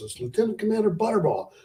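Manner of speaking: mock, shrill, very high screaming. Retelling a phone call where the caller keeps screaming, imitating a man screaming. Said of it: "And he's still screaming".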